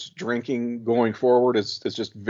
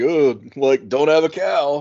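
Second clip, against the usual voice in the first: put-on heavy, acted drunken sarcasm, slow and drawn out; 4 semitones higher, 4 dB louder than usual. Recounting a favorite scene as cops show up, quoting drunk Brandon mock-sarcastically. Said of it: "he does the very sarcastic".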